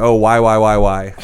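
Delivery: ordinary talk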